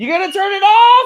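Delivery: very loud, high-pitched shouting yell. Retelling calling over to a son about a fire alarm: retelling own yell. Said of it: "I'm yelling over to the side to tell him".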